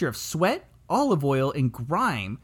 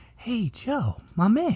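put-on soft, gentle tone, higher pitch; 4 semitones higher than usual. Restarting a greeting after coming on too strong: mock gentle delivery. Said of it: "I should be more gentle".

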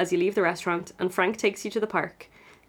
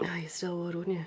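quick, leering, pervy old man voice, put-on; 10 dB quieter than usual. Teasing the other speaker about Frank, speaker uses a pervy old man voice. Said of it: "Why did I put on a pervy old man voice".

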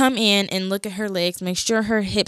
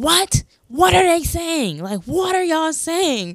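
acted scared, bewildered, high-pitched screaming; 8 semitones higher than usual. Recalling screaming questions at the people talking while scared: retelling a scream. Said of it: "So I kept screaming like".

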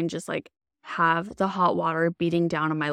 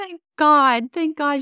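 very high-pitched, loud, tearful relieved crying, acted out; 10 semitones higher, 6 dB louder than usual. Retelling being checked by the nurse, the speaker re-enacts crying. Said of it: "and I'm crying".

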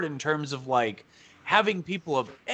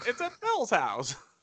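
high-pitched, clean-cut American voice; 6 semitones higher, 6 dB quieter than usual. Retelling a clean-cut movie character's lines: Jimmy Stewart voice. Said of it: "every clean-cut American guy is just Jimmy Stewart".

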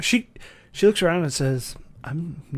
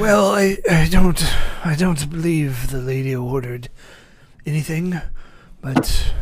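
put-on elderly butler voice, louder; 5 dB louder than usual. Voicing an old butler greeting the visitors at the door: old butler voice. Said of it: "the sound of the old butler".

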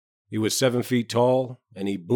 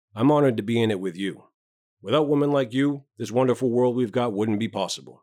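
ordinary delivery, nothing marked

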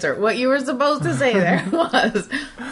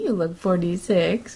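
sugary, lovey-dovey, would-be romantic sweet voice; 4 semitones lower, 3 dB quieter than usual. A wife imitating what her husband said to her, mock romantic, sweet voice. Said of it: "he says in like what's supposed to be a romantic, sweet voice".

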